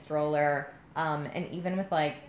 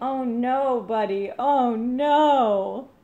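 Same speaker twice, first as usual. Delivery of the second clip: put-on laughing while talking, higher and louder; 8 semitones higher, 9 dB louder than usual. Retelling someone upstairs changing the baby: imitating someone laughing while talking. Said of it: "through his laughter saying".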